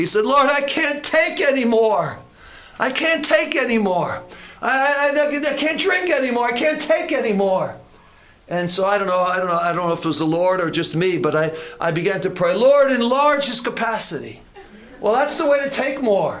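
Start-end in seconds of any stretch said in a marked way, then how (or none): 0.3-7.8 mock loud bellow, much higher. Retelling how a man being prayed with cried out, retelling a loud bellow. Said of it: "he bellowed out in a loud voice".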